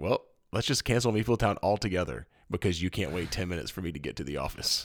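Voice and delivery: ordinary delivery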